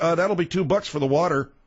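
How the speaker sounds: ordinary talk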